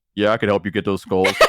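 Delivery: deepest possible, very low bass voice. Retelling how a guy answered a request for help, in a very deep voice. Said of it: "deepest voice I've ever heard went".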